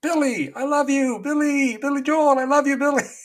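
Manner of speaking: very high, loud, besotted, adoring scream. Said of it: "he starts screaming at the top of his lungs".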